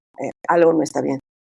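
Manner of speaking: normal talking voice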